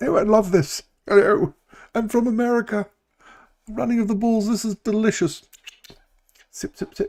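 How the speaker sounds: very high, delighted, put-on English accent. Imagining Derek at the running of the bulls with his coffee, English accent. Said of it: "Now Derek's got an English accent".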